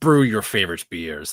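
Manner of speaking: strange, mysterious, cryptic movie-trailer narrator voice. Speaker acts out a beer-brewing game trailer in a Disco Elysium narrator voice. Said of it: "that weird cryptic voice he uses".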